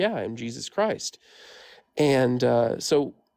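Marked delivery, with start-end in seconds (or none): none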